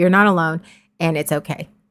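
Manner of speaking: usual speaking voice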